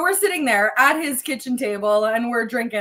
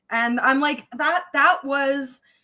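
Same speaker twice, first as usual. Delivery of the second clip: ordinary talk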